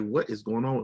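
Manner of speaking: normal talking voice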